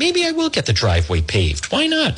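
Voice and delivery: high-pitched voice, musing, thinking it over.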